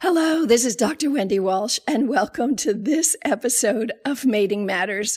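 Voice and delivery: voice worn ragged, hoarse and raspy. Greeting listeners at the start of an episode with laryngitis, in a hoarse laryngitis voice. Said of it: "this is what laryngitis sounds like".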